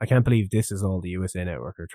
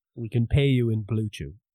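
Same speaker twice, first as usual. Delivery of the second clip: normal talking voice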